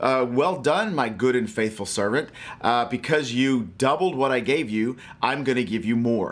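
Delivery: ordinary delivery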